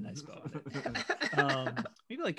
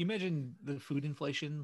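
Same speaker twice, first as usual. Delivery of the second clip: ordinary delivery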